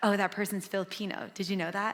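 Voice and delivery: ordinary talk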